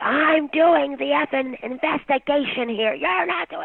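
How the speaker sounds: mock very high, shrill screaming outburst. Retelling how a man banged the desk and was screaming: imitating someone screaming. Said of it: "screaming at me".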